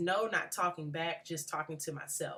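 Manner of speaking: usual speaking voice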